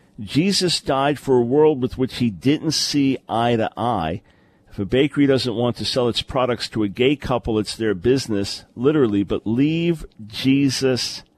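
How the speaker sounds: ordinary delivery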